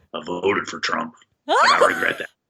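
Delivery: very deep, sing-song put-on voice, swooping around. Giving a soundbite from a Futurama character: Scruffy voice. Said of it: "Scruffy says".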